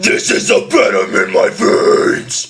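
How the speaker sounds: very drawn-out false chord vocal. Showing a learner how the line sounds with voice: false chord scream. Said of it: "You'll hear the voice".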